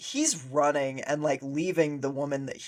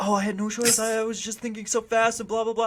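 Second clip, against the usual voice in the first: mock high, whiny, weaselly wheedling voice; 7 semitones higher than usual. Mocking a movie character's excuses after a fall, imitating weaselly excuses. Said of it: "doing that stupid weasel bullshit".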